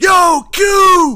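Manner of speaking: very high, loud scream.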